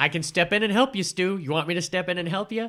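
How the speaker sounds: high, loud, eager voice.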